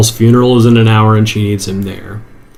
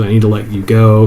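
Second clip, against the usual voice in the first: usual speaking voice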